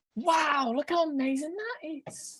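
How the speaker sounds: very high-pitched, sarcastic mock awe. Chatting with a mate and reacting to something: sarcastic mock enthusiasm. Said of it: "That was so sarcastic".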